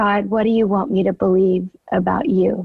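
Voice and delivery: whispered voice. Retelling finally asking god the question: retelling a whisper. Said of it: "in a whisper".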